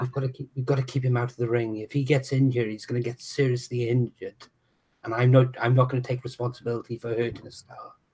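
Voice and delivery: low, hushed stage whisper. Half-whispering to Heavy Metal while grappling in the ring: half-whisper. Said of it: "I'm gonna whisper to Heavy Metal".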